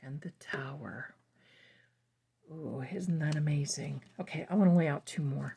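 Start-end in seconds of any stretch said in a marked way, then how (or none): 2.5-5.6 half-whispered under the breath, hushed and low. Laying out more cards for her darlings, half-whispering. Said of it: "I'm whispering".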